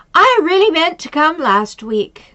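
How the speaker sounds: mock loud, high voice. Retelling what a woman waiting at the door said on spotting the speaker, in a really loud voice. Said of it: "she said in a really loud voice".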